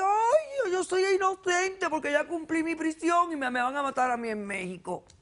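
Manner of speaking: high, scornful, sarcastic put-on parroting. Confronting a man, the speaker parrots his words back mockingly. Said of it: "[En tono burlón]".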